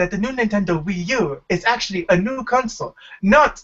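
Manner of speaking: failed put-on Japanese accent. Trying out an accent in a group conversation, a bad japanese accent. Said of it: "That's not even a Japanese accent".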